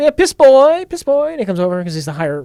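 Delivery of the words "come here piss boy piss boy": lofty upper-class voice, high, slow and grand. Quoting a line from a Mel Brooks movie: imitating Harvey Korman as a high-society guy. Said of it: "Harvey Korman saying".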